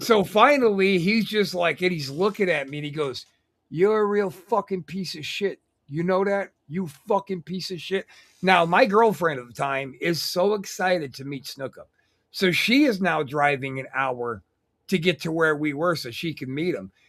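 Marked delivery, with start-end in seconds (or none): 3.7-8.1 mock belligerent drunk voice, higher pitch. Retelling what Snookup said to him, imitating drunk Snookup. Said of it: "he's hammered and he's belligerent".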